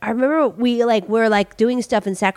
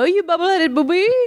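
put-on theatrical exasperated voice, higher; 7 semitones higher than usual. Retelling a Lost in Space scene, imitating Doctor Smith. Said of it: "Doctor Smith go".

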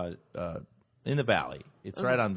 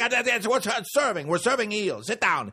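put-on loud, angry, pitched-up mad chef yell; 11 semitones higher, 5 dB louder than usual. Retelling the sushi chef making him sit: imitating the angry chef yelling. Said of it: "he gets mad".

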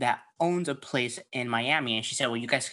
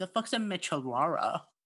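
put-on, mocking confused tone; 5 semitones higher, 3 dB quieter than usual.

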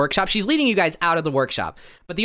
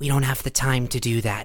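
tiny, small, low voice; 5 semitones lower than usual. A game narrator voices a speaker near the bunk the players can't see, small voice. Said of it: "You hear a small voice that says".

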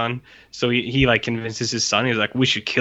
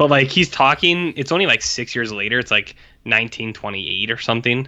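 usual speaking voice

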